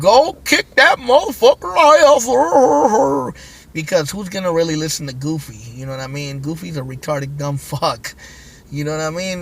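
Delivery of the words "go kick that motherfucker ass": very high, dopey, stretched-out cartoon drawl. Telling listeners to imagine their ego sounding like Goofy: Goofy voice. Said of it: "Imagine the voice of your ego being Goofy going".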